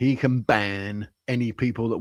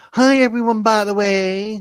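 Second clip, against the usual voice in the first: flamboyantly camp voice, high and loud; 9 semitones higher, 5 dB louder than usual. Relay Electrodoc's greeting to everyone, in Electrodoc's camp voice. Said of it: "in his camp voice".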